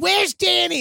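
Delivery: mock screaming in a very high-pitched voice. Retelling how the landlady screamed at the door: imitating someone screaming. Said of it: "you can just hear her screaming".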